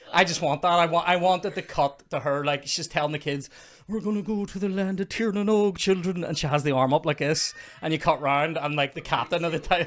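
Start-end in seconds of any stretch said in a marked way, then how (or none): 3.8-6.2 higher-pitched put-on Irish accent. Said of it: "she's talking to her kids in Irish".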